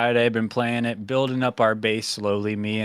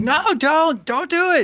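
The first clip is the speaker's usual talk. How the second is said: put-on scream, much higher-pitched and slower; 5 dB louder than usual. Retelling a game where a player kills Kelvin; imitating Fatal Tone screaming. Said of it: "Fatal Tone screaming like".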